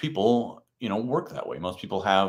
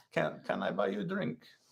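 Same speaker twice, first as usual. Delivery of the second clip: speaking English with a Russian accent; 8 dB quieter than usual. Trying the same offer again, now said in a Russian accent. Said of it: "In Russian accent".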